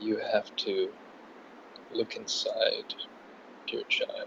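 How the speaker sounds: put-on low, guru-style yoga voice. Speaking to Mike during the bit, low yoga voice. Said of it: "I gotta drop down into the low yoga voice".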